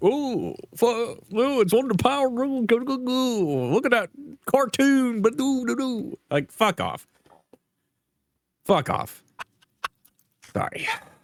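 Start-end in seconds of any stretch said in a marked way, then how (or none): 0.0-5.7 mock tech bro voice, higher. Retelling how tech bros react: mocking imitation of tech bros. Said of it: "these fucking tech bros jump in like".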